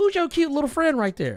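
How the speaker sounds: auntie voice, pitched very high. Retelling an auntie walking up and asking about a friend: imitating a fine auntie. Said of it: "She like".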